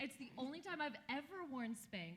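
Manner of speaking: ordinary talk, nothing marked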